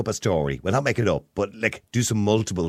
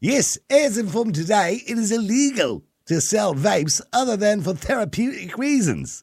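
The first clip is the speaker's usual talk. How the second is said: very bad fake Australian accent, very high-pitched; 13 semitones higher than usual. Reading a news item aloud at a co-host's request, in a bad Australian accent. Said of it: "That's the worst Australian accent ever".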